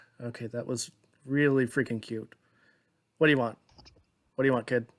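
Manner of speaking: said on a quick sigh, resigned, caving in. Voicing a character who was just shown a cute look: sighing while speaking. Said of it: "they just seem to sigh and say".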